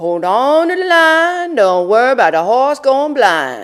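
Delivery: put-on very loud, high North Carolina accent. Quoting the speaker's mother's odd farewell to everyone: mom's North Carolina accent. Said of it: "I'm going to use her North Carolina accent".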